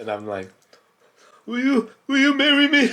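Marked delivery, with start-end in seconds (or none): 1.4-2.9 very high, squeaky, cracking voice. Retelling kneeling down to propose: imitating own cracking voice. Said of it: "my voice cracked".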